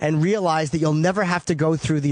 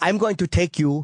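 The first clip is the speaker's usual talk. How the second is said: put-on Israeli accent. Retelling the comedy club booker offering to take him along, in Esty's Israeli accent. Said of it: "in her Israeli accent".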